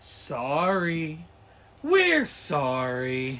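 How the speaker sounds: "sorry" drawn out, groveling and demeaning. Retelling a cartoon CEO's apology videos: imitating South Park CEO apology. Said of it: "so, like, demeaning".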